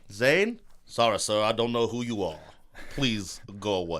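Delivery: vague put-on accent, cranky colonel voice, a bit cross. Speaker plays a man brushing off someone who calls him Zane, in a Foghorn Leghorn voice. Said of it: "Is that an Eastern European accent?".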